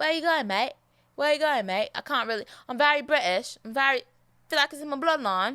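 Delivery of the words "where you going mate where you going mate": half-managed, faltering Australian accent. Speaker who says they only do British accents well tries another: attempted Australian accent. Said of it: "I can't really do an Australia accent".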